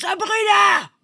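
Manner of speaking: loud, high-pitched, full-out shout.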